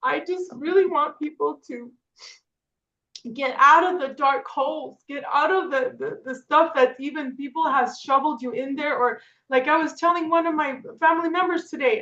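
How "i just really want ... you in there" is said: tearful, crying voice, speaking through tears. Speaking to listeners about wanting to help people, the speaker talks while crying. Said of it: "And I'm crying because".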